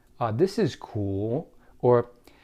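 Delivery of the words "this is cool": "this is cool" said slowly, rising at the end. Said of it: "you have an upward inflection of your voice, like".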